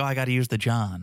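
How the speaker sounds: put-on American grandma voice. Imagining what a grandma would say if american: imitating an american grandma. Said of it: "if your grandma was American, she'd be like".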